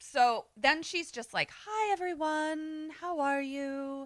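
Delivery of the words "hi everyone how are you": gentle, soothing, sweet, high, unhurried voice. Retelling how Salen greeted everyone: imitating Salen's sweet voice. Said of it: "such a sweet voice".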